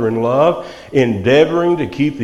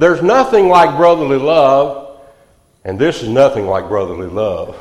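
ordinary delivery

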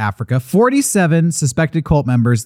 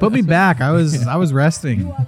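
normal talking voice

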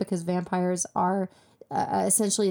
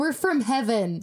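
mock fed-up, frustrated, exasperated tone; 4 semitones higher than usual. Retelling a character's reply after being questioned: imitating Fiore's frustrated reply. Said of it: "He's so frustrated".

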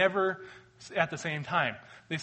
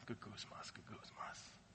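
muttering, lower and quieter; 8 semitones lower, 23 dB quieter than usual. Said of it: "murmuring, muttering under your breath".

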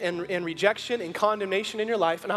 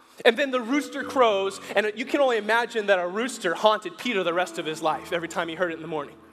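ordinary talk

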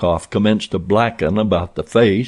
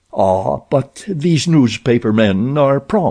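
sudden, pitched-up, exclaiming; 5 semitones higher than usual. Rokoff, hearing a heavy step on the stairway, exclaims. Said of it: "exclaimed Rokoff".

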